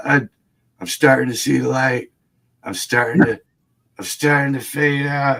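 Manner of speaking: put-on, phony dying voice. Retelling how a bleeding man faked dying: imitating someone faking dying. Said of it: "starts pulling this bullshit where he's like".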